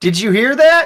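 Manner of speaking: very high-pitched, loud yell. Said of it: "I'm gonna yell across the cannery".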